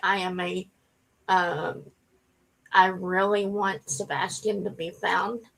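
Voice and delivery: speaking on the edge of crying, holding back tears. Talking about wanting a missing child found, holding back tears. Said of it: "trying not to cry".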